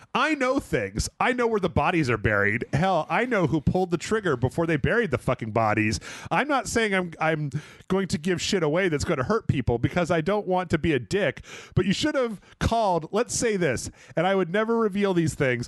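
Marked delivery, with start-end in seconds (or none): none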